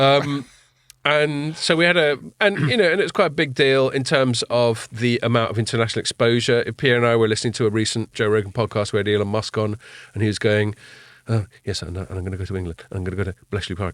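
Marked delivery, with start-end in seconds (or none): 11.3-13.9 soft, hushed, low-key, understated voice. Recalling Elon Musk on a Joe Rogan podcast, doing your best Elon Musk impression. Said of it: "That's that's my best Elon Musk impression".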